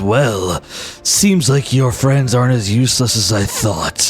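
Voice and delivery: low, dark voice. Narrating a fantasy battle, voicing an unseen figure speaking to a hero, dark voice. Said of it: "you hear a dark voice".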